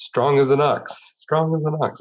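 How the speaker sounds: put-on Polish accent pitched very high. Recalling how a woman talked in her mother's accent, in a Polish accent. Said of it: "she would s talk in her her mom's accent".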